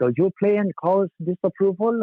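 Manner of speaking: German-sounding voice. Retelling a surprise phone call from a caller: imitating a German accent. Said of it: "this German-sounding guy".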